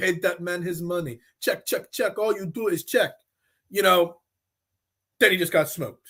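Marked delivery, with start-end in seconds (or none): 0.0-3.1 bad, put-on Russian movie accent. Joking that a pitcher talks about his contract: Malkovich Rounders Russian accent. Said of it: "my Rounders, you know, accent from Malkovich".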